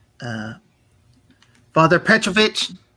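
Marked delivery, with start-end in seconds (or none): 1.7-2.7 put-on small boy voice, calling out loudly. Voicing a small boy in clerical robes calling for the priest: calling out loudly. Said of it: "he calls out".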